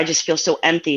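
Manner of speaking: normal talking voice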